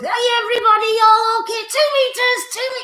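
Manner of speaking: very high, squeaky puppet voice. Introduced to the audience as a fabulous friend, greeting everyone in Mr. Monkey Monkey puppet voice. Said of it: "please welcome my fabulous good friend, Mr. Monkey Monkey".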